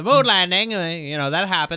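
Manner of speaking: put-on mid-Atlantic accent. After a co-host praises the accent, the speaker keeps the bit going: mid-atlantic accent. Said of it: "I love how [name] was doing a mid-Atlantic accent".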